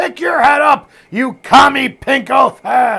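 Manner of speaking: very high, very loud, shrill drawn-out scream. Retelling a wrestling coach's yell at camp: imitating a coach screaming. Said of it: "he's screaming".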